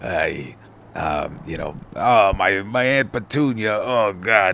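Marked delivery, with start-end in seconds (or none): 1.9-4.5 very slow, drawn-out, rock-hard voice. Imagining how a comic character sounds: Ben Grimm voice. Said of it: "you just imagine him sounded like a rock".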